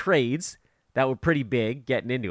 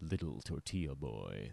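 very low, deep, hushed, near-silent trailer voice; 11 semitones lower, 17 dB quieter than usual. Recalling a comic's movie guy voice routine: Pablo Francisco movie guy voice. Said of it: "remember Pablo Francisco".

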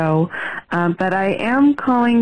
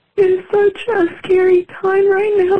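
crying while talking, much higher pitch; 13 semitones higher than usual. Speaker saying she is scared and worried, crying while talking. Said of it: "I didn't mean to cry on this".

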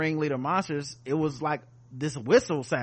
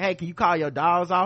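ordinary delivery

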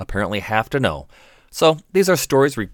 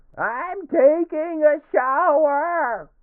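put-on very high, drunken, angry outburst. Acting out a drunk patient's answer to the doctor, playing mock drunken anger. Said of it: "Drunken anger".

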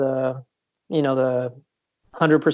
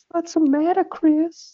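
put-on very high creepy old-man voice. Explaining who they were trying to sound like: creepy old guy from Family Guy. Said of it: "Like the creepy old guy".

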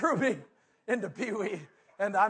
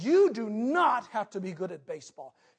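imitated sternly speaking voice. Retelling what mom said to him after baseball: imitating mom speaking sternly. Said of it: "She looked into my face very sternly".

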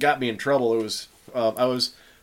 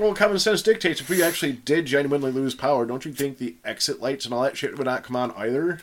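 normal talking voice

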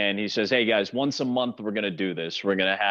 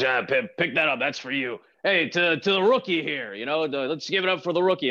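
big, gruff, deep put-on old-fashioned man voice; 5 semitones higher than usual. Retelling Sparky toasting the rookie to the whole room, Sparky's big gruff deep voice. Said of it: "He's got this big, gruff, deep voice".

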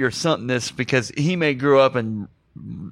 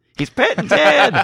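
high, loud, slow put-on kid voice. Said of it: "funniest thing Jake Lloyd has ever said".

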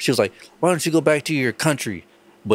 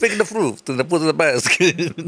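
put-on Italian-sounding accent, pitched up; 5 semitones higher than usual. Repeating what others say, in an Italian-sounding accent. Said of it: "What kind of accent is that?".

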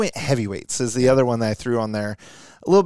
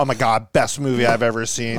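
ordinary talk

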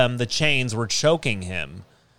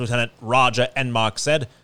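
ordinary talk, nothing marked

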